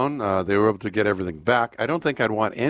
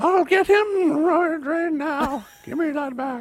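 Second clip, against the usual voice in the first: put-on horrible old-lady impression, much higher, slower. Joking about sending Betty after him, imitating 90-year-old Betty. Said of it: "That's my horrible impression of her".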